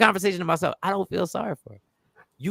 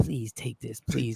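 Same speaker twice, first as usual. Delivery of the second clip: hushed, secretive pleading under the breath; 8 semitones lower, 7 dB quieter than usual. Retelling how she handed something over: imitating someone speaking quietly. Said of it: "she said quietly".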